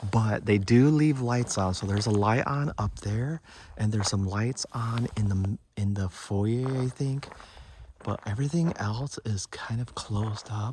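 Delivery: hushed whisper the whole way through. Coming back to the front of the cabin, narrating to listeners, whispering. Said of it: "I have no idea why I'm whispering".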